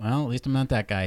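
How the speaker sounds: normal talking voice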